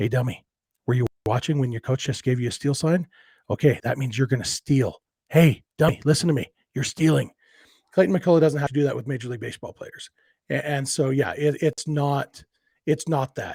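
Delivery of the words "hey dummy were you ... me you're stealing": hushed, quiet whisper. Coaching first base for his son's little league team, whispering to a player. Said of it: "most of the time what I'm whispering is".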